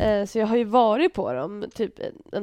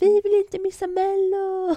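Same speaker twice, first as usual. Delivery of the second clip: mock screaming, much higher, louder; 10 semitones higher, 4 dB louder than usual. Retelling noisy youths on a bus stuck in traffic, imitating kids screaming. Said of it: "satt och skrek om det".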